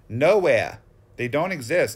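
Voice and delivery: put-on Boston accent. Looking at vintage cards, answering his own question in a Boston accent. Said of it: "I'll give you the answer in my Boston accent".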